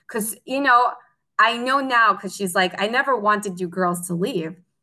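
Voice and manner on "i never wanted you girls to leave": usual speaking voice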